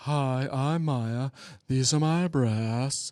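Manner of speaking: slow, drawn-out tv commercial spokesperson voice. Imitating a commercial before muting it: imitating a commercial. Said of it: "whenever it comes on, I just mute".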